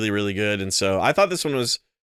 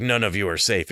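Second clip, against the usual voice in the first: put-on forced monotone voice. Imitating how an actor voiced Batman in the movie: imitating Ben McKenzie's Batman voice. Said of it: "he sounds like he's trying to do a Batman voice".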